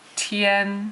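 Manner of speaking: tian held flat in high level first tone. Demonstrating a tone that stays the same: high level tone on tian. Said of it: "It's a first tone, ... it stays at the same tone".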